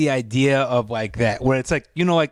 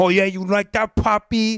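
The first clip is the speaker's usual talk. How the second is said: put-on high-pitched New York accent; 6 semitones higher than usual. Describing a woman who talks dirty, imitating her New York accent. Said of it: "she like has this like New York accent".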